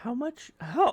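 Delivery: voice cracking into a very high squeak. Talking with the group about building the base: voice cracking. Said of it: "the voice crack".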